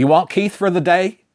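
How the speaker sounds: put-on Texas accent. Quoting what a man said when he called, imitated texas accent. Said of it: "in his Texas accent, ... Like that".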